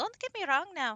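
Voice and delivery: high-pitched, mangled blend of Irish and Scottish accents. Trying a pixie voice with a very bad Irish-Scottish accent. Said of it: "do a pixie voice and try to do a very bad Irish Scottish unholy amalgamation accent".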